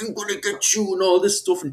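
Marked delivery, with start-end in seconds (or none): 0.0-0.9 put-on angry voice, higher. Retelling what an angry debate opponent posts on TikTok: imitating an angry commenter. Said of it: "you stop being so angry there".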